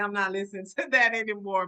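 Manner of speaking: normal talking voice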